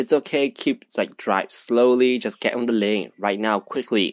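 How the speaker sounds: normal talking voice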